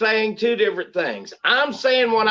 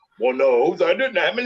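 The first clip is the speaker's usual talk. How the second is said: put-on low, dopey dumb voice; 4 semitones lower than usual. Imitating the listener's predictable reply, mocking dumb voice. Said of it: "I'm giving you the dumb voice".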